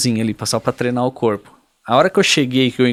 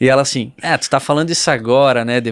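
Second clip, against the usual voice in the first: ordinary delivery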